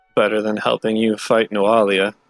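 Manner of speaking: private, muttered remark to himself. Voicing a guard who mutters under his breath: muttering under his breath. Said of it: "mutter under his breath".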